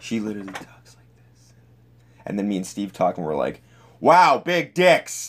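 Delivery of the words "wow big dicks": booming, blaring, high, very loud loudspeaker-style outburst. Showing how he and Steve talk on the recording, retelling it super loud. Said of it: "And it's super loud".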